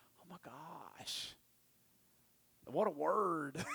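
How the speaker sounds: low, hushed, slow, softly breathed awe. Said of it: "I'm sitting there going".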